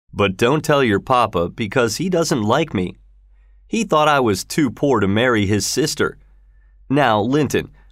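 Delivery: ordinary delivery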